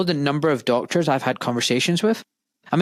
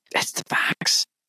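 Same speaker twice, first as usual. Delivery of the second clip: hushed, quiet, kept-down delivery. Retelling what doctors say in closed rooms: imitating hushed quiet tones. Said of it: "saying in hushed, quiet tones".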